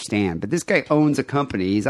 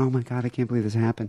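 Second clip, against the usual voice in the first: put-on meek voice, much quieter; 3 semitones higher, 4 dB quieter than usual. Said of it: "probably like really meek".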